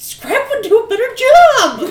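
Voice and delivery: shouting in character. Sending an angry message to a party member in character: yelling in character. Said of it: "but I'm yelling at you".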